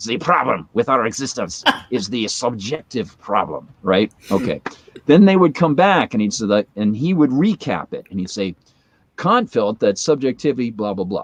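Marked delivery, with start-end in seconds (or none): 0.1-3.7 put-on German accent. Retelling how a guy in an ad spoke: Kant's accent impression. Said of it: "Kant's accent".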